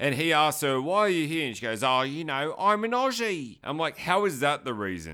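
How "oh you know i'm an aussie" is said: slow, silly, mocking fake Cockney accent. Retelling an actress's line in a film, imitating a stupid Cockney accent. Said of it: "the voice is really stupid".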